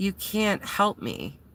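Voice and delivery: put-on, slow, utterly defeated tone. Retelling a crying woman's reply to an offer of help: imitating a defeated woman. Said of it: "so defeated".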